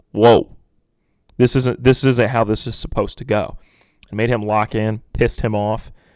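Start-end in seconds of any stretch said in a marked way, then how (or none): none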